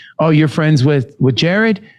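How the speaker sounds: plain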